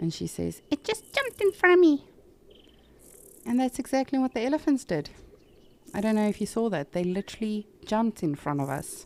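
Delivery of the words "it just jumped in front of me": put-on very high, cutesy, cute old-lady voice. Retelling an old lady's line from an animated advertisement: imitating a very cute old lady voice. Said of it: "she's got this very cute voice on".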